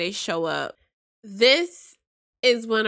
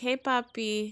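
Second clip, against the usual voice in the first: put-on flirtatious tone, quieter; 2 semitones higher, 7 dB quieter than usual. Retelling a character greeting a new man: imitating a flirty greeting. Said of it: "Instantly flirty".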